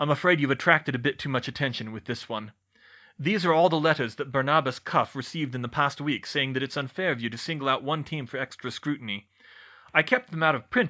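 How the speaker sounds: plain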